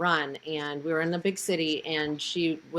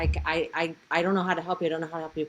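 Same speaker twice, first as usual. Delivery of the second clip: put-on frightened voice. Retelling her mom's reply to a bandaged man who grabbed her, imitating someone scared. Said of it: "she was obviously scared".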